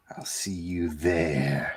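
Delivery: creepy voice, very low and very quiet. Telling a co-host he'll see him at Heroes Con, creepy put-on voice. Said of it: "I'll use that voice".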